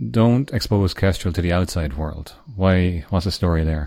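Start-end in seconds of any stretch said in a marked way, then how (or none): none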